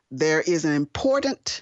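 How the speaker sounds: heavy emphasis placed on the word "important".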